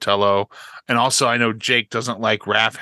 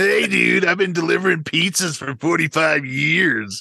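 higher-pitched put-on surfer voice; 7 semitones higher than usual. Mocking a disliked Michelangelo actor: Townsend Coleman impression. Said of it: "You don't like Townsend Coleman?".

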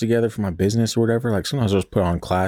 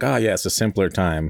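plain

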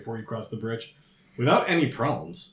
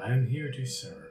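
begrudging, sad voice, quieter; 5 dB quieter than usual. Answering a newcomer who wants to ask questions, in a begrudging sad voice. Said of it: "You hear sort of a begrudgingly sort of sad voice".

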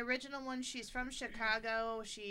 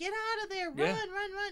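mock very high, loud scream; 10 semitones higher, 5 dB louder than usual. Retelling how a mother in a movie screams at her kid: imitating a scream.

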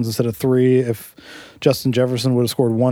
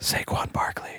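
hushed, very quiet whisper. Naming a running back so a listener won't be upset, whispering. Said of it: "I'll whisper it".

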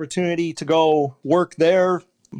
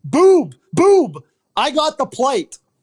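swooping, very high, drawn-out bellowing yell; 9 semitones higher, 3 dB louder than usual. Retelling a fellow umpire yelling while running during a game: imitating Larry yelling. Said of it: "he yells".

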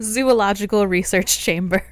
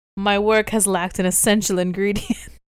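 normal talking voice

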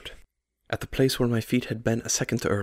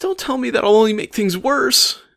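very high, loud, whiny delivery; 11 semitones higher, 7 dB louder than usual. Carl cuts off the narrator who tries to reason with him, whining. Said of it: "he whined".

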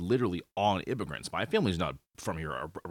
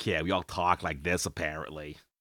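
put-on Boston accent; 3 semitones lower than usual. Speaker from Massachusetts shows how people think locals talk, in a Boston accent. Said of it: "we're really famous for the Boston accent".

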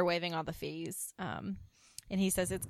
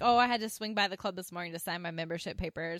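usual speaking voice

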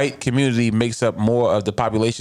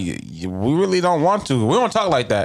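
plain

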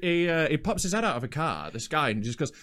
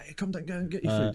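put-on Glaswegian accent; 3 dB quieter than usual. Recalling a phone call after ordering Chinese food, in a Glaswegian accent. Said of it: "a Glaswegian voice was like".

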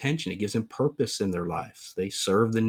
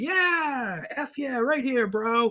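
over-the-top whoop, very high, very slow, drawn out; 13 semitones higher than usual. Retelling a student's reply in front of teachers, imitating an over-exuberant kid. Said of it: "stands up over exuberantly".

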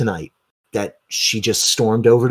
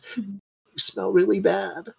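soft, high, little hiccuping sobs; 9 semitones higher, 6 dB quieter than usual. She grabs hold of you and buries her face in your clothing: hiccupy sobs. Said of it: "she goes into those little like hiccupy sobs".

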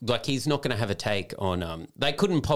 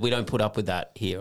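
ordinary delivery

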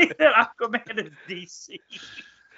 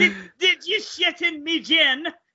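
put-on pirate voice, higher pitch; 9 semitones higher than usual. Acting out a pirate captain drawing his sword: Captain Jack Sparrow voice. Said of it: "Captain Jack Sparrow pulls out his sword and goes".

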